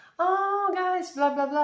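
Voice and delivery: very high, loud, hawker-style screaming yell. Retelling a flea market visit, imitating vendors screaming. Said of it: "screaming in Arabic".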